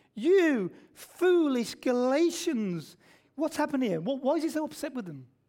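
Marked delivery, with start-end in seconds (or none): 0.2-3.0 mock angry exclaimed outburst. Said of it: "now he's angry".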